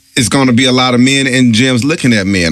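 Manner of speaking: ordinary talk, nothing marked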